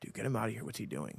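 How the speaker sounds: very quiet, muttered mumble. Retelling what two guys nearby said to each other: imitating someone mumbling. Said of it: "they mumble to each other".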